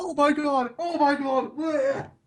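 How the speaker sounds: very slow, high, drawn-out panicked gagging. Retelling another speaker running out about to vomit: imitating someone about to vomit. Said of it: "You ran out freaking saying".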